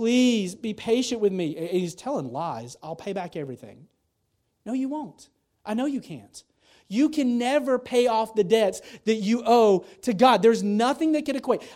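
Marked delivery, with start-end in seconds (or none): 0.0-1.6 acted begging, pleading tone, higher. Retelling the parable, voicing the indebted servant before the king, acting out begging. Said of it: "He's begging".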